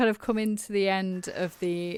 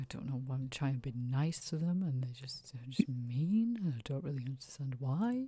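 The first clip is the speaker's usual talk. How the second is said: muttering under breath, lower and quieter; 6 semitones lower, 9 dB quieter than usual. A storyteller voices a character who turns back, muttering under his breath. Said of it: "muttering to himself a little, like under his breath".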